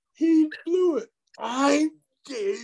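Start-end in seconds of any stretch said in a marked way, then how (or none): 1.4-2.7 put-on furious voice, very high-pitched. Retelling the partner insisting on his name at the door: imitating Cheech mad. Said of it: "He was so mad".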